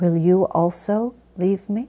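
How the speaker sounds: softly spoken, matter-of-fact. Retelling how one man turned to another to ask him, very quiet. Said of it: "very quietly asks".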